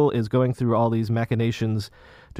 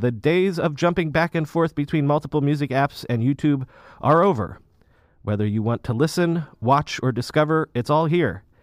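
ordinary talk, nothing marked

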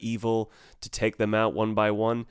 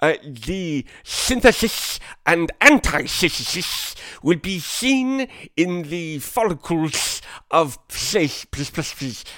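put-on thick lateral lisp, higher and louder; 8 semitones higher, 7 dB louder than usual. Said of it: "speaks with a very thick lateral lisp".

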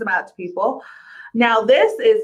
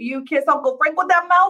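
put-on New York accent, pitched up; 5 semitones higher than usual. Recapping an episode, quoting her retort to her aunt, in a new york accent. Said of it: "she like says it in a New York accent".

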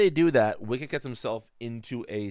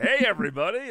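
very high, upbeat, all-cheer voice; 10 semitones higher, 4 dB louder than usual. Imagining a character walking into a funeral: Guy Smiley voice. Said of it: "Guy Smiley walks in and is like".

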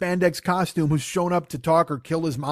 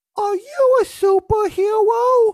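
put-on very high, loud, cutesy little-kid voice; 7 dB louder than usual. Recounting a scene where a four-year-old girl meets the Silver Scarab, stereotypical little kid voice. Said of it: "stereotypical bullshit little kid voice".

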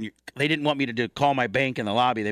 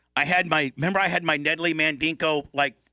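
ordinary delivery

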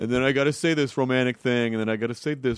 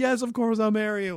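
mock tearful, very high, sobbing through the words; 10 semitones higher than usual. Retelling a proposal where the fiancée answered: imitating someone crying. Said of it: "And she's crying and like".

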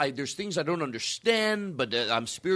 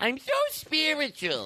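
very high, sing-song, swooping put-on character voice; 10 semitones higher than usual. Repeating a phrase in someone else's voice, do an impression of someone. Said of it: "It's a good impression".

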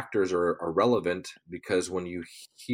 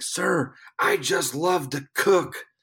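very high, drawn-out, overjoyed excited shout; 9 semitones higher, 3 dB louder than usual. Retelling a young winner running up excitedly, imitating someone yelling excitedly. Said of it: "getting in my face and yelling".

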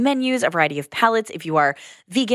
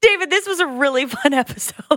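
pitched-up talking bubbling through laughter; 8 semitones higher than usual. Wrapping up an episode with the co-host, laughing while talking. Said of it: "Sorry, I'm laughing".

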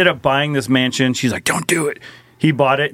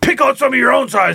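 put-on very high, overblown, over-the-top shouted yell; 11 semitones higher than usual. Acting out an over-the-top show host confronting demons, imitating a man yelling at demons. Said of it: "he's yelling at demons".

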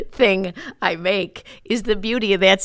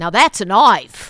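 loud, put-on Australian accent; 5 dB louder than usual. Doing an Australian accent on air for an Australian listener, Crocodile Dundee impression. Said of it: "That's my Crocodile Dundee".

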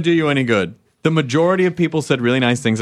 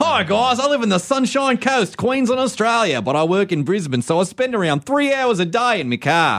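fake Australian accent, higher; 8 semitones higher than usual. Reading a listener's letter aloud: put-on Australian accent. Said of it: "I just added the Australian accent".

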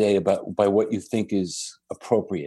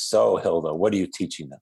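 put-on very stern, severe, grave tone; 3 semitones lower than usual. Retelling how Sai Baba questioned Hilda: Sai Baba's stern voice. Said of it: "in a very stern voice says".

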